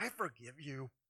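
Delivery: quiet, deep, hushed, spoken through tightly clenched teeth. Speaker acts out forcing forgiveness on someone who hurt us: through gritted teeth. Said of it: "through gritted teeth".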